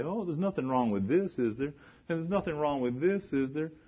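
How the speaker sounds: high-pitched, rapid, complaining whine. Quoting people who cling to what they worked hard for, imitating a whining voice. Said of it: "you hear them in whining voice say".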